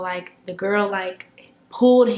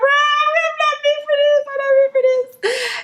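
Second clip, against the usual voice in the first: acted, very high-pitched tearful crying breakdown; 4 dB louder than usual. Retelling breaking down alone in a bathroom: retelling crying words.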